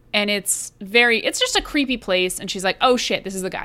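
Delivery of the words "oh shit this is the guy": ordinary talk, nothing marked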